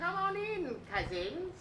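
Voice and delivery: squeezed, high-pitched, soft voice.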